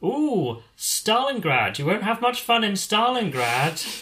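landlady voice, pitched very high. Retelling a comedy sketch, quoting the b and b proprietor: imitating a b and b proprietor. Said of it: "the proprietor sort of comes over ... and she goes".

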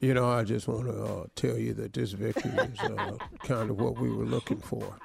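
very low, deep, rough, creaky voice. Doing a coach's victory statement after being asked to: Bill Belichick impression. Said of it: "do Billy check, uh, when he won".

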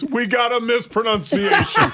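loud, slow laughter while speaking.

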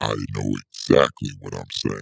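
very low, creaky, rough demonic devil voice. In a debate, answering another speaker's challenge, in a devil voice. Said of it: "Don't give me the devil voice".

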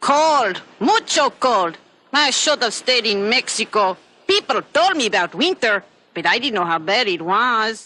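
bad put-on Mexican accent. Describing the Chihuahua Chi-Chi, a speaker does his line in a bad Mexican accent. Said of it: "it's not even a good Mexican accent".

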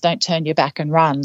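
plain

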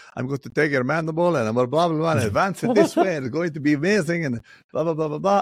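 put-on high, heavy Spanish accent. Quoting a man speaking to a patient, thick Spanish accent. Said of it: "He had a very thick Spanish accent".

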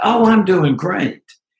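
bright, chipper, high, cheerful tone. Retelling a mother's reply on a phone call, imitating a cheerful voice. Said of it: "she said in this cheerful way".

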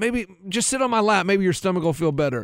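ordinary delivery

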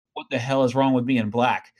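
grumbled, meant to be overheard. Retelling a kid's remark made under his breath: imitating someone muttering. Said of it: "he mutters under his breath".

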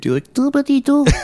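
high squeaky toy voice. Speakers reminiscing about Furby toys and their noises; Furby voice. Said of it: "That's a very good Furby impression".

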